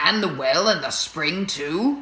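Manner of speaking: plain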